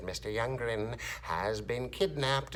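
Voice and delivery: eerie, unsettling, really creepy put-on voice. Retelling what you said in each room with your camera off, in a creepy voice. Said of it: "I came on in a really creepy voice".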